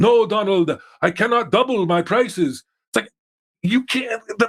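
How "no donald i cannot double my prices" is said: put-on French accent voice, higher. Retelling how Trump did a Macron impression: Macron impression. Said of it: "did a, a Macron impression".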